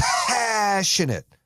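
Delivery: very high, heartfelt, passionate voice from the chest. Speaker leading listeners to say the word with him, passionate from the chest. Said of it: "It's coming from the motherfucking chest".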